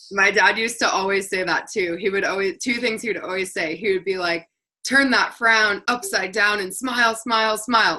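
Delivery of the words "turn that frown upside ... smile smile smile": mild, lightly shouted, cheering, rallying yell. The speaker recalls a phrase their dad would always yell, retelling dad's yell. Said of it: "Like he would yell that".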